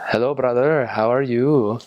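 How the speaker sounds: put-on Indian English accent. Giving examples of phrases people commonly say, in an indian accent. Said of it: "I'm proud of my Indian accent".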